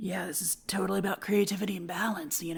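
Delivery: rough, creaky, raspy male voice. Imagining a seedy guy named Spider who has found enlightenment: Spider voice. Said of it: "this guy named Spider sitting there and he's just like".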